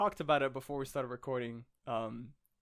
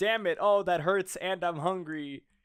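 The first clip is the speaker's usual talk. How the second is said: rambling, high-pitched yells and screams of pain; 5 semitones higher, 4 dB louder than usual. Retelling a comic scene: imitating Luffy screaming. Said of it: "he starts screaming a whole bunch of random shit".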